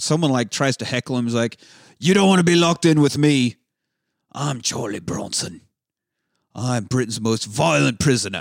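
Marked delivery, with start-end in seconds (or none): 2.0-8.4 terrible put-on British accent with a hard-man tone. Retelling a film scene where the prisoner yells at a heckler: terrible British accent imitating Charlie Bronson. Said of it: "Terrible accent".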